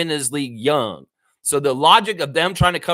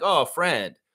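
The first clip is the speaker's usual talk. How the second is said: put-on snarky, mocking, sneering tone; 3 dB quieter than usual. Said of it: "They're talking like that".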